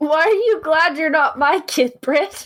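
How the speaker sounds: very high, scary, scolding mother voice. Speaking to another speaker on the show, terrifying mom voice. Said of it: "terrifying mom voice you're using there".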